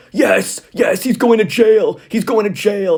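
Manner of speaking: shrill, delighted, gleeful shouting through laughter. Describing a clip of a woman on a sofa yelling at the tv, retelling gleeful laughing yells. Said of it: "she was like laughing and yelling at the T V".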